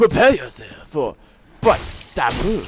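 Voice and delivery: deliberately bad fake Japanese accent. Speaker switches on a voice for the line, in their worst Japanese accent ever. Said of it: "let me turn on my worst Japanese accent ever".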